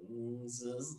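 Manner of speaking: soft, hesitant voice of mock uncertainty.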